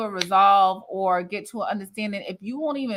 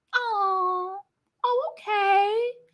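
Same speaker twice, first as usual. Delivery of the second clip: mock-condescending impression, much higher pitch; 12 semitones higher than usual. Speaker mocks how Mel talks all the time, imitating Mel's condescending tone. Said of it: "Like that condescending".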